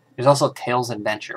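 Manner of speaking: ordinary talk, nothing marked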